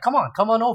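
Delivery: suave, smooth, charming delivery. Retelling cosplayers calling the speaker over: imitating a smooth charming invite. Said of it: "with the ultimate Riz".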